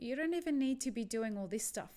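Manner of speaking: plain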